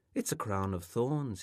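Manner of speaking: ordinary delivery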